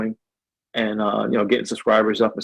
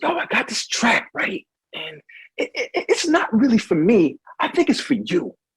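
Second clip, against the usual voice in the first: laid-back, soft, high, cool whispery voice; 12 semitones higher than usual. Retelling how Manny offered him a track he produced: imitating Manny's whisper. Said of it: "stop whispering to me".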